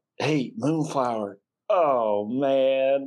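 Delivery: slightly uneasy, nervous laughing through the words. [name] sees this on the Jumbotron and calls to Moonflower, nervous laughing. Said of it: "kind of laughing, but like a little bit nervous".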